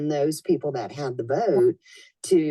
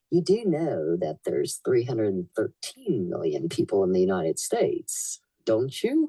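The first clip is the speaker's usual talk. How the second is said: very deep, swooping, animated put-on character voice; 7 semitones lower than usual. Retelling how he turned to her and spoke, use kind of a Joel Blakeslee voice. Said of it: "in the perfect voice, kind of a Joel Blakeslee voice".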